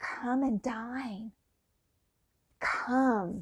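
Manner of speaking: soft whisper. Picturing a shouting mob, the speaker acts out Jesus alone in the corner, whispering. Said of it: "and he's whispering".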